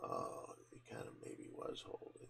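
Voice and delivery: unvoiced, whispered aside.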